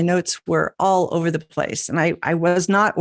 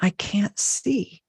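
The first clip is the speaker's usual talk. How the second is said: put-on tiny, small, little child's voice; 3 semitones higher, 4 dB quieter than usual. Retelling waking at midnight to the granddaughter on the monitor, in a little voice. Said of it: "this little voice saying".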